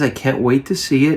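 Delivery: ordinary talk, nothing marked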